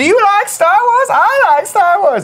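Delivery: very high-pitched, loud, showy put-on voice. Showing the others an impression of Carboni: imitating Carboni. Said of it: "when I motion capture Carboni".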